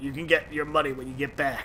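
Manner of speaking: clumsy, bad, gruff character voice. Recapping the game, answering the mercenary's demand for pay, in a terrible Barret voice. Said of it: "That's a really terrible Barrett voice".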